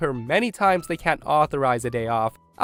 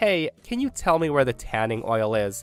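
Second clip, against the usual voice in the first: plain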